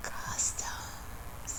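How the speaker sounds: dramatic whisper after a pause.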